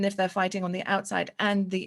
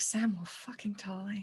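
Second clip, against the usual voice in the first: quiet muttering under the breath; 6 dB quieter than usual. Voicing a character's quiet aside about accepting help: muttered under her breath. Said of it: "under her breath".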